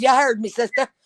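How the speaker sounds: ordinary talk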